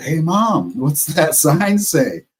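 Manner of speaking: put-on drawn-out smart-aleck kid voice. Retelling asking his mom what a sign says, imitating a smart-ass kid. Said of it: "Like a smart ass kid".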